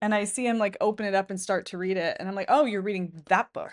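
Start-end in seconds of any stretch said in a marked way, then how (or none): 2.5-3.7 mock judgmental tone, louder. Retelling own judgy reaction to a partner's book: imitating own judgy remark. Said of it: "I was so judgy".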